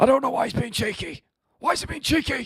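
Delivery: raspy voice pitched very high. Doing an impression after being asked to say the line: John Fury impression. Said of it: "in John Fury's impression".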